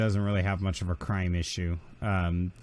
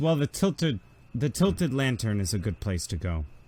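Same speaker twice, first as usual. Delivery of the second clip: ordinary delivery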